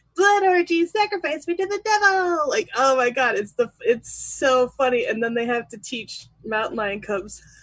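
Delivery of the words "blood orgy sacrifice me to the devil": tiny, high-pitched cartoon critter voice. Retelling a bit where the speaker voiced all the critters, little cartoon critter voice. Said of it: "I did all the little cartoon voices".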